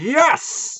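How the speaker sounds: fake ring announcer call. Mocking a wrestling commentator's call: Marv Albert style announcer yell. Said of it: "sounds like Marv Albert reincarnated".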